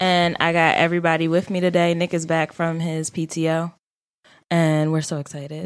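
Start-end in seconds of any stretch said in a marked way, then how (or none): 4.5-5.7 flat, completely unenthusiastic delivery. Host welcoming Nick back from PTO on the show, flat and unenthusiastic. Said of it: "Don't sound so excited about it".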